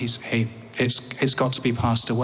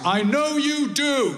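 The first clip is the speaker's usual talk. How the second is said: acted, raised, loud, very high-pitched voice; 14 semitones higher than usual. Walking out of the hospital ward, the speaker retells their dad calling out in a loud voice. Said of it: "I hear my dad say in a loud voice".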